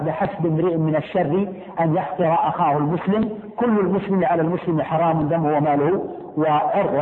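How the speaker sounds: usual speaking voice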